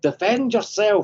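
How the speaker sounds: shrill, high, loud fake Scottish accent. Quoting a Scottish guy's Star Wars line to a co-host, in a Scottish accent. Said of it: "but they had this with the Scottish guy. He's like".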